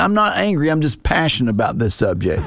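ordinary talk, nothing marked

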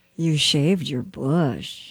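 very flirtatious, flirty delivery. In an acting game, a player delivers the set phrase flirty. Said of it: "very flirty".

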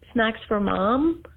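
put-on mild, tender, gentle smiling voice. Retelling how someone tapped a bag and smiled: imitating a gentle smiling voice. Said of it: "smile at it gently and say".

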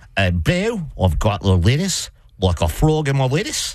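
casual, put-on Australian accent. Quoting an australian roommate announcing a frog in the lettuce, in an australian accent. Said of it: "You got to do that in an Australian accent".

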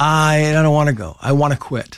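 plain

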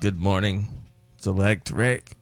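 low voice with open disgust. Greeting the other speaker by name in the morning: disgusted. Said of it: "You sound disgusted to say my name".

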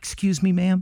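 meek, timid little voice. Recalling rolling down the car window to address a woman, retelling own timid voice. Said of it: "in the most timid voice you could muster".

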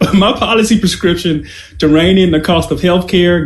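speaking through a laugh.

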